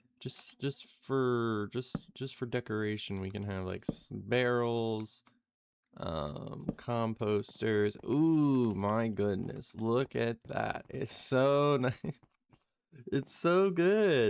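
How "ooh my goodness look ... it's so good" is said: really sarcastic-sounding tone. Praising the decorations just placed: sounding really sarcastic. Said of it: "I sound like I'm being really sarcastic".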